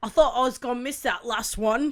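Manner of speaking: deliberately bad, clumsy put-on British accent. Retelling what a man said after cracking a nut in his hand; bad british accent. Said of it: "Your British accent is amazing".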